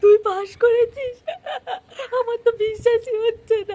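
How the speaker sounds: tearful, laughing disbelief.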